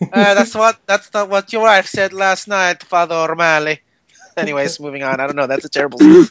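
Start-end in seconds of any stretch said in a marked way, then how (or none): 0.1-3.8 put-on Scottish or Irish accent. In a made-up confession scene, the confessor answers the priest in a fake scottish or irish accent. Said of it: "I think it's Scottish or Irish".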